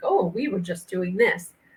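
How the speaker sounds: ordinary talk, nothing marked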